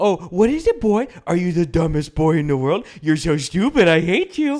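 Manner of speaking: sweet, nice, bubbly pet-talk voice. Showing how to talk to a pet: talking like to a pet. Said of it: "it's the tone and inflection".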